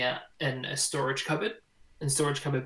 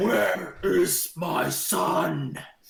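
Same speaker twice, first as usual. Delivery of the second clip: very slow, huge booming giant voice; 5 semitones higher, 6 dB louder than usual. Voicing a giant bursting into the room: booming giant voice. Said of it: "a booming giant voice".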